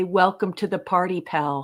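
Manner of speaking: ordinary talk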